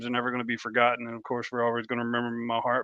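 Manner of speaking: deliberately fast, rushed delivery. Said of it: "I'm talking fast on purpose".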